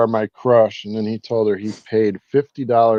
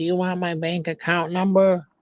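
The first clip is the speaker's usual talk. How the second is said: put-on, high, little-old-grandma voice; 7 semitones higher, 6 dB quieter than usual. Retelling how she finally answered a persistent caller, imitating an old grandma. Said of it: "talking to the lady like she was a grandma".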